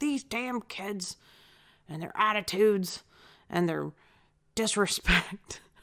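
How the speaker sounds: put-on cranky, grumbling, griping old person voice. Joking about feeling old after rude service, imitating a grumpy old person. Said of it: "that's when I felt like an old person".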